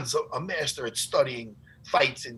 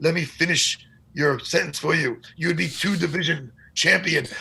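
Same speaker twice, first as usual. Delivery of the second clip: put-on creepy accent. Retelling what a friend said about his career: imitating John's creepy accent. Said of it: "his creepy accent".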